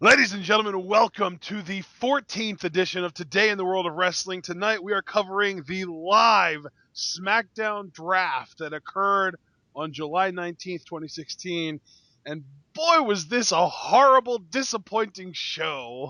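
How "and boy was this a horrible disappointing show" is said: gleeful, with "show" drawn out. Introducing tonight's wrestling draft coverage to the audience: gleeful. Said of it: "said that with all the glee in the world".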